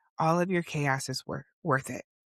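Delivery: ordinary talk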